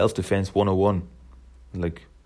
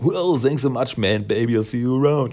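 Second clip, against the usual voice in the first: put-on laid-back surfer-dude voice, higher pitch; 4 semitones higher than usual. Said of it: "Leonardo trying to imitate Michelangelo".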